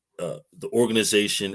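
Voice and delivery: ordinary talk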